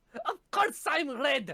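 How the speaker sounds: ridiculous, over-the-top put-on French accent, pitched high. Arguing over how a name is pronounced, in a ridiculous French accent. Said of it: "this ridiculous accent?".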